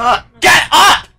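shrill, very high, very loud furious screaming outburst. During a game stream, angry yelling. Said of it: "Calm down, jeez!".

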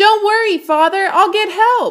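very high calling back. Narrator reads a son answering his father as he runs off, calling over his shoulder. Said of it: "Radius called over his shoulder".

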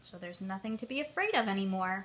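ordinary delivery

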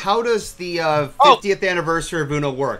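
normal talking voice

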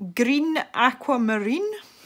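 Scottish-sounding accent, high. Naming pencil colours on camera, the speaker says this shade in a Scottish-sounding accent. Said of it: "Sounded really Scottish there".

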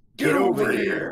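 put-on gruff game-character voice. A streamer answers a viewer's request to sound like Scorpion: gruff Scorpion voice. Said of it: "Gruff voice".

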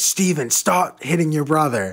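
high, loud yell. Retelling a grandmother's scolding at a sleepover: imitating grandmother yelling. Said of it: "she would yell at me".

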